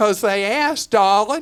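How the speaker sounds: put-on heavy, laid-on Southern accent. Speaker quotes mom explaining why she gave to these people: thick southern accent. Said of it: "my mom had the thickest Southern accent".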